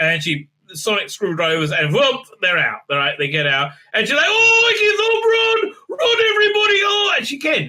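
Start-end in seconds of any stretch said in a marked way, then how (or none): 4.3-7.1 mock very high, frightened babbling cries. Retelling a tv character fleeing danger, imitating a terrified, chattering character. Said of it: "like a terrified, chattering moron".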